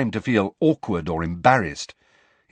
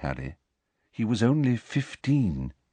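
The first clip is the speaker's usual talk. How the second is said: ordinary delivery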